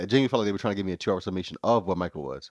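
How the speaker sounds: falling statement tune on the whole line.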